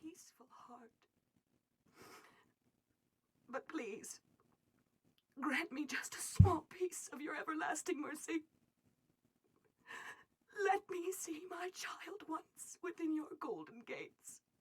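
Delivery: tearful pleading voice. Begging for mercy and to see a child once more: crying while pleading. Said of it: "She's still in here crying".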